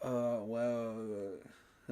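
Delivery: bland, hesitant put-on stalling with filler. Mocking a coach's press answers: imitating a bland hesitant answer. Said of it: "I'll just give the most bland answer ever".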